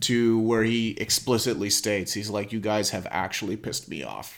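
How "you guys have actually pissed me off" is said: put-on deadpan movie villain voice, quieter. Quoting a villain's line from a movie: imitating Brolin's deadpan delivery. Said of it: "deadpan delivery from, uh, Brolin".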